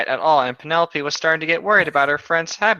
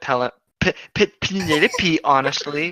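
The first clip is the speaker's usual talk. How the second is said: plain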